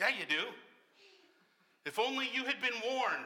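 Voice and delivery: parental scolding tone. Answering someone who insisted despite warnings, sounding like a parent. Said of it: "I sound a little like a parent there".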